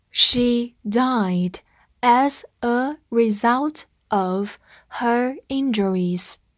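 slow, drawn-out read-along delivery.

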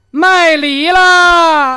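high, very loud hollered turtle cry. Acting out a joke, performing the promised turtle call: mock turtle call. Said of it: "那我给你学了".

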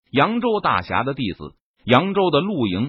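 ordinary delivery, nothing marked

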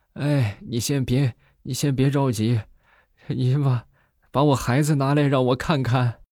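frail, feeble voice. Retelling a patient on the dentist's chair speaking to the dentist: imitating a weak voice. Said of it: "虚弱的声音".

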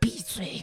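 barely audible, very soft whisper. Retelling telling a panicked actress on stage to be quiet: imitating a very soft whisper. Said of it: "所以我就特别轻地说了一句".

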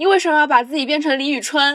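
loud, high-pitched outburst. Recounting arguing with mom on a crowded street, imitating mother saying it loudly. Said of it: "我妈就大声说了一句".

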